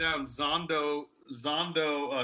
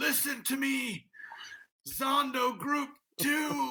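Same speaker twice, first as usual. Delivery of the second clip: gasping dying ant voice, higher; 9 semitones higher than usual. Acting out a six-foot ant dying on the floor: dying ant gasping its last breath. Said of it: "gasping its last breath".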